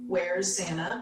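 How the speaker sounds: acted-out whisper. Retelling a question asked outside as police put up tape: retelling a whisper. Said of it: "And I whispered to Emily".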